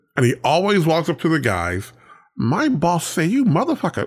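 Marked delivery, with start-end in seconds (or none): 2.4-4.1 high, effeminate, dubbed-in kung fu voice. Retelling a dubbed kung fu movie troublemaker: imitating a dubbed feminine voice. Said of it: "dub his voice in to make him sound a little, uh, let's say, feminine".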